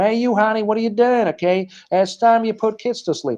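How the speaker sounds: put-on high, nagging yelling. Telling of a wife coming home to her husband, imitating her yelling at him. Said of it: "she starts yelling at him".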